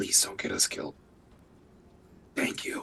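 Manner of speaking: hushed whisper. Playing a character who speaks softly to her weapon: whispering to her weapon.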